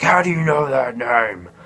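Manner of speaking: mock scream. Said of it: "He starts screaming".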